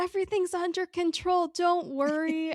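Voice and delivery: loud high yell. Retelling a character yelling while being carried out: imitating someone yelling. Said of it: "he's just yelling while they're carrying him".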